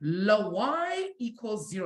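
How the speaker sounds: very slow delivery in a put-on French accent. Repeating a student's answer in class: imitating Isaiah's French accent. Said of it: "like in a French accent".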